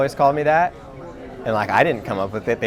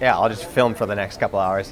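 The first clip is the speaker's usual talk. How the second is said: ordinary talk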